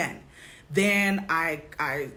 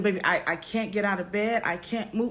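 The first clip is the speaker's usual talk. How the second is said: put-on tearful, crying voice. Retelling what was said on the phone while in tears: retelling own tearful words. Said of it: "And I just burst into tears again".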